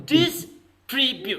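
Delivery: distribute said slowly and drawn out. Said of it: "how you have to pronounce this word".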